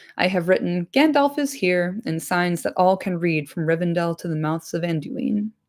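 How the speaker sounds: ordinary delivery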